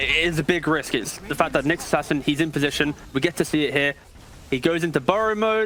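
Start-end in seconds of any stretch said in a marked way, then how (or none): none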